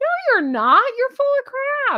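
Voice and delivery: full-on loud yell, voice very high. Reacting angrily to a plan to step back: yelling. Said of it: "I'm yelling".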